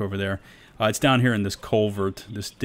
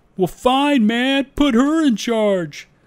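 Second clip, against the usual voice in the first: mocking sarcasm, very high pitch, drawn out; 8 dB louder than usual. Giving a movie quote for a trivia question: sarcastic movie quote. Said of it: "You gotta say it like that, too, kinda sarcastically".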